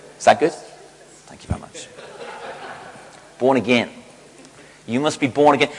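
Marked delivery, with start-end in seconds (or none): 3.4-5.7 put-on American accent on every word. After being coached by Americans in the congregation, the speaker tries an American accent. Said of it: "wants to say it with an American accent".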